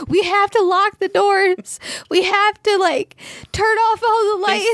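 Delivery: very high, frantic, panicked sobbing. Retelling running into grandma's bedroom as a child: imitating own past panicked sobbing. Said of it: "freaking the fuck out and, like, sobbing and being like".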